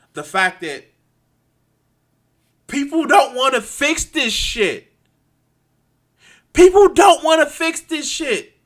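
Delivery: very high furious ranting. Speaking to the guys, admitting being pissed off and frustrated: angry. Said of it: "I'm not sorry for being fucking angry".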